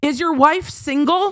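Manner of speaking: put-on very high, hollered, drunken yell. Retelling a man leaning out of a truck window at the speaker, retelling a man yelling. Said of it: "why are you yelling".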